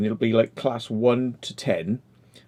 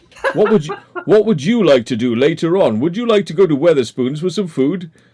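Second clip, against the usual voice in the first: mock radio presenter voice, higher and louder; 6 semitones higher, 7 dB louder than usual. Imitating people from Southampton: radio-presenter-like Southampton locals. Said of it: "they all sound like bloody radio presenters".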